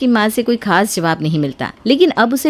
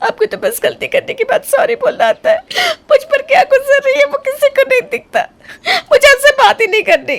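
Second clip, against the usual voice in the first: sobbing words, very high-pitched, tearful crying. In a skit, answering the other character's apology while crying. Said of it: "अरे अरे अब इसमें रो क्यों रही हो?".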